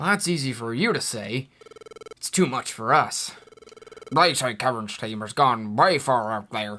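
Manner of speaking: put-on cartoon creature voice, dropped low. Voicing a Pokemon in the game: Snubbull voice. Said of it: "your Snubbull voice".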